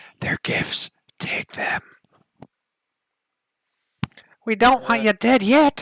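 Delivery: shrill, very loud, high, drawn-out whisper. Voicing an unseen presence speaking from all around the players: whispering voice. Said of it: "a familiar whispering voice".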